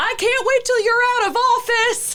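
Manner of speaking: very high, shrill heckling yell. Retelling a woman walking past them, retelling Liz's shout. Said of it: "Liz just shouts".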